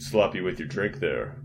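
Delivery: cool movie-star voice. Retelling a film scene where a robot confronts a man who spilled whiskey; Yul Brynner voice. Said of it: "like in his Yul Brynner awesome voice".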